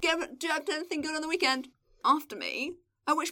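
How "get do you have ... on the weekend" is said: put-on shout, higher pitched. Retelling an office acquaintance shouting a question after you: imitating someone shouting. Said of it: "and he shouts".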